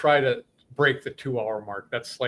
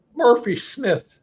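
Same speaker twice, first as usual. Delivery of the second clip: very high, put-on Irish accent; 10 semitones higher, 4 dB louder than usual. Giving shout-outs to race winners, saying a winner's name in a put-on Irish accent. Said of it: "I'm trying to do my best Irish accent for this".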